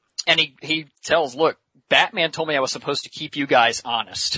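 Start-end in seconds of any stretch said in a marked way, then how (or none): none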